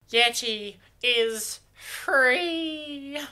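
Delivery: high, squeaky elf voice, "free" held long. Speaking to the audience, dropping a quick reference as a Dobby impersonation. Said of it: "my beautiful impersonation".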